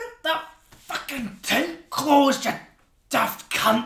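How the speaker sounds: loud, high, furious, snapping voice. Voicing a character refusing a player's offered hand: angry Frillwood voice. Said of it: "and walks off".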